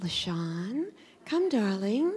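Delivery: soft, sweet, tender, gentle calling out. Contrasting her own screaming with how Roxana spoke to her daughter, imitating Roxana's sweet, gentle voice. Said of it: "They need sweetness and gentleness".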